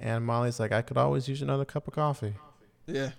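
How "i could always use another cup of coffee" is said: mock flirtatious voice. Recapping a story, quoting one character's reply, retelling Molly's flirty line. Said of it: "That's Molly being a little flirty".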